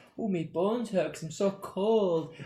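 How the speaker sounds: mock old man grumble. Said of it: "I talk like an old man".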